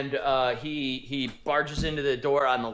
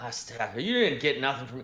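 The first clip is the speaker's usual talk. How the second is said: put-on slurred speech. A guard challenges the newcomer who says he joined the group, slurring his words. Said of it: "you notice that he's slurring his words".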